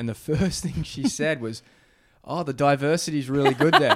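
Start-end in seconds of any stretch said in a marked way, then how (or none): 2.2-4.0 mock heavy sarcasm, raised voice. Retelling what a restaurant owner said on hearing they lived in boston; imitating a really sarcastic remark. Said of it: "in like a really sarcastic way".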